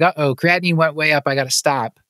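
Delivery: ordinary delivery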